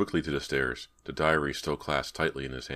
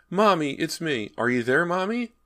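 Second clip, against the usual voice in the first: put-on high, small, frightened little-boy voice calling out; 6 dB louder than usual. A narrator reads a little boy calling out in an empty bedroom, frightened little-boy voice. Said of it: "he heard a little boy's frightened voice".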